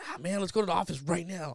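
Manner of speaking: mock fired-up, pumped-up, angry, urgent energy. Retelling own words after finding the car towed: retelling being pumped up and mad. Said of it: "pumped up and mad".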